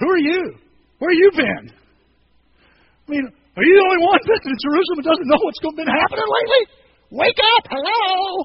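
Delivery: put-on sarcastic snap. Retelling how discouraged followers snapped back: imitating a sarcastic snap. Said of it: "they get a little sarcastic".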